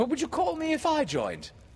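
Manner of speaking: insistent, very high-pitched, loud, swooping voice. A boy questioning the pirate, demanding. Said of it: "Michael demanded".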